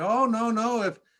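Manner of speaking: high-pitched, thick Russian accent.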